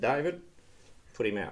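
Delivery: ordinary delivery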